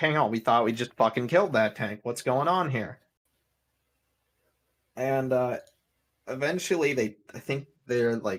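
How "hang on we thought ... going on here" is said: plain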